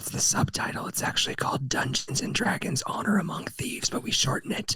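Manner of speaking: whispering voice. Explaining a film's full title to another speaker, whispering. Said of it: "I'll stop whispering now".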